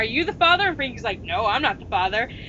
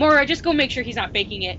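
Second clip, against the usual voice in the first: put-on huffy, irritated tone. Speaker retells how someone ordered a friend to check on a faker: retelling a huffy order. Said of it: "Jane gets all huffy".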